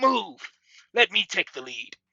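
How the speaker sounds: very loud, high, urgent screaming voice. Voicing a blaster creature swapping places in combat: screaming out an order. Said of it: "as he screams out".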